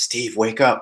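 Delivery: deep, loud whisper. Retelling a voice heard in his ear while lying down, deep loud whisper. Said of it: "in a pretty deep, loud whisper".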